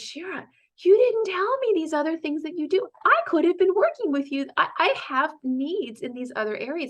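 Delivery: acted very high-pitched, half-serious playful joking yell. Quoting a man who just learned she also coaches, retelling a joking yell. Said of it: "he yelled at me".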